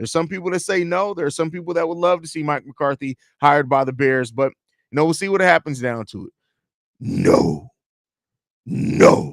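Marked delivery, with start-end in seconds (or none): 7.0-9.3 whispered impression voice. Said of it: "You gotta say it in the Caesar voice".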